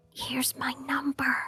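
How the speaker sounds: quiet whisper. Voicing a character giving her number: whispering. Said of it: "she just whispers her number".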